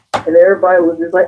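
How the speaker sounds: ordinary talk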